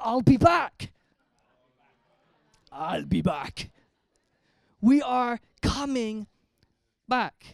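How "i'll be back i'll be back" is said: slow, drawn-out, rough put-on voice. Speaker asks listeners to turn to the person next to them and use a Schwarzenegger voice. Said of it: "in your best Schwarzenegger voice".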